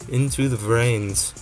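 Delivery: flat mumbling.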